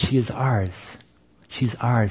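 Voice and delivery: hushed, tearful voice.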